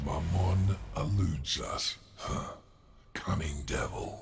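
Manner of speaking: very low, deep, devilish demon voice. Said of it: "It's a good demon voice".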